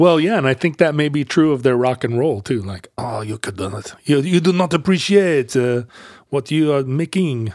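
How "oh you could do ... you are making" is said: put-on French accent. Discussing how the French hear American rock and roll, in a Pepe Le Pew French accent. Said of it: "You're kind of like a Pepe Le Pew".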